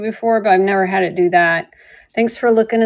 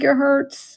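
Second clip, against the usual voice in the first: put-on pained screaming, crying out in hurt; 4 semitones higher than usual. Retelling calling to a passing driver: imitating her own screaming. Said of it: "screaming that it hurts".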